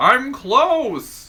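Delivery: high-pitched squeaky cartoon voice. Speaker redoes a line they just said, in a SpongeBob cartoon character voice. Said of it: "like a SpongeBob character or someone who's just like".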